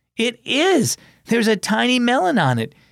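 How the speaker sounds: high, lively, delighted exclamation. Looking at a vine by the fence, a son tells his dad: exclaiming. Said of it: "he exclaimed".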